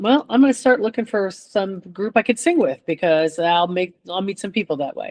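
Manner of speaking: ordinary delivery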